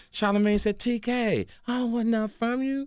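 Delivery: light, soft, high voice. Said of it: "Did he say it that light".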